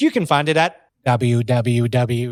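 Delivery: very slow, drawn-out, fake robotic computer voice. Suggesting how to announce the ticket website: put-on ai voice. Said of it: "have an A I voice come in and be like".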